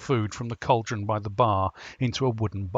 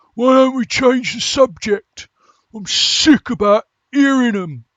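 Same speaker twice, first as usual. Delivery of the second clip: very high, very loud gruff barking voice; 14 semitones higher, 12 dB louder than usual. Narrator voicing one of two guards talking at the bar, in a higher gruff voice. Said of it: "A higher up but equally gruff voice".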